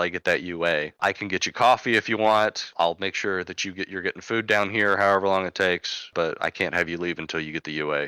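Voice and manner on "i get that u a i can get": plain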